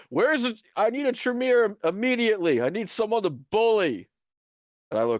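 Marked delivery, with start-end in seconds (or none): 0.1-4.0 high, raised, bullying yell. A tabletop player voices their character Gabriel, yelling. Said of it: "Gabriel yell".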